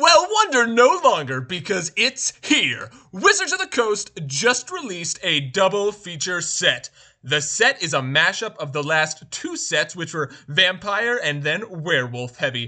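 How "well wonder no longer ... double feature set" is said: high, loud hyped reviewer voice. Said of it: "Why are you talking like this?".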